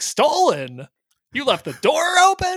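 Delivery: whine, high pitch, slow pace, swooping. Recounting Jerry upset at Kramer and Elaine: whiny high-pitched Jerry voice. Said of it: "speaking in that whiny high-pitched voice like".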